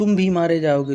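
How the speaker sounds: भी hit hard and loud.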